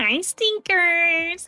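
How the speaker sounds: put-on nasal voice. A streamer imitates how Basil says hello: nasal Basil-voice greeting. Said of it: "He goes so nasally with it".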